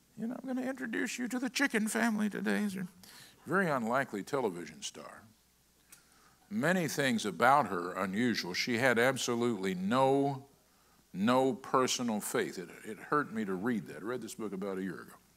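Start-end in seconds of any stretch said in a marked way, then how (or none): 0.2-2.7 very high, thin, shrill voice. Imitating a television chef introducing a dish: Julia Child shrill voice. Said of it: "had a real shrill voice like this".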